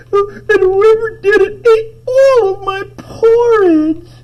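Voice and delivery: very high, loud, slow wailing cry. Telling the bears-and-porridge story, doing Baby Bear's line: crying Baby Bear voice. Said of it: "Baby Bear crying".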